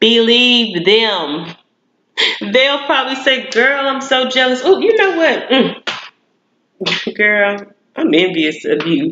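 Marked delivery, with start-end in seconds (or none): 3.5-9.1 mock easygoing, mellow, gentle delivery. Imitating a friend who admits being jealous: imitating a mellow tone. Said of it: "they try to say it in a tone, like a mellow tone".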